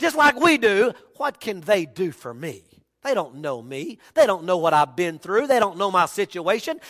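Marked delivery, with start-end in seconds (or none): 1.2-6.8 put-on snippy and defensive, very low, muttered. Speaker retelling a woman at Jacob's well answering him, imitating her snippy, defensive tone. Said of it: "she gets a little snippy and she just gets a little defensive".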